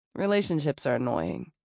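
plain

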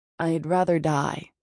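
plain reading voice

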